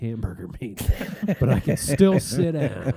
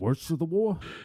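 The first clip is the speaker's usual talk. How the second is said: put-on older man voice, higher and quieter; 4 semitones higher, 5 dB quieter than usual. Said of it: "That's [name]".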